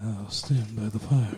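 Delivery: low, intimate bedroom radio voice. Doing a line like the radio host just named: Alan Almond bedroom radio voice. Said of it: "That's what you sound like".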